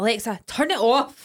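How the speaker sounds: loud, slow, mock-angry voice. Retelling snapping at the voice assistant when tired, mock-angry command. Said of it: "As if like, I'm really angry".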